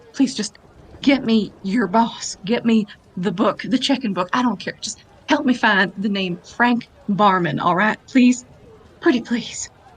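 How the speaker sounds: very intent, focused whisper. Voicing a character begging quietly for the boss: whispering very intently. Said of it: "she's just gonna whisper very intently to Bonnie".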